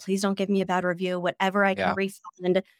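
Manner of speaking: desperate pleading, full of apology and desperation. Retelling own past reply to a guest complaint: imitating desperate begging. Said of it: "begging desperately".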